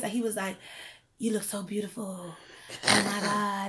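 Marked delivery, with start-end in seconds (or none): 1.2-3.7 soft, seductive, trying-too-hard sexy voice. Retelling what a man said leaning over the stair banister, in mock-sexy voice. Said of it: "he was trying to use this sexy voice".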